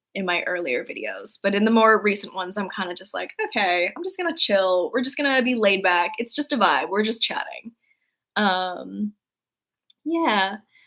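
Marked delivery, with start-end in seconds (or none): none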